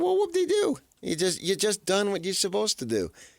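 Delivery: gloating, mocking, high sing-song tone. Imitating the other speaker gloating after his team won: mocking imitation. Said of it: "'Cause then you can say".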